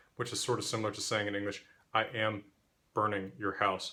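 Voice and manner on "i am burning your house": ordinary talk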